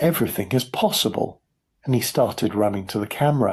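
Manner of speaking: ordinary delivery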